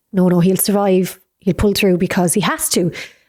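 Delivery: ordinary talk, nothing marked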